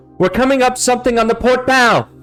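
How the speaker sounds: loud, very high, bird-like projected cry. A bird-like creature watching from the front of the ship reports back: loud projected voice. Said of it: "a loud projected voice".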